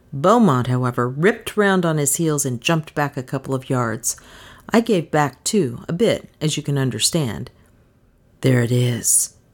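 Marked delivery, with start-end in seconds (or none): 8.4-9.3 breathless, hushed, much lower and slower. Beaumont, having jumped back a couple of yards, tells the narrator in a low, breathless voice. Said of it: "he said in a low, breathless voice".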